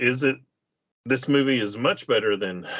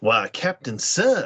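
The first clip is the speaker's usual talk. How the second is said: put-on Southern accent. Imitating a Star Trek actor's voice as it drifts: DeForest Kelley Southern accent. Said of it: "the Southern accent kicks in with, uh, DeForest".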